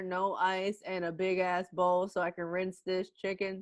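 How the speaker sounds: ordinary talk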